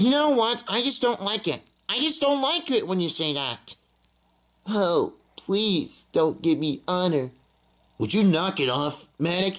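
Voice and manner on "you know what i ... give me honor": put-on babyish, whiny little-baby voice. A character told to stop acting like a little kid answers back; whiny little-baby voice. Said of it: "You sound like a little baby there".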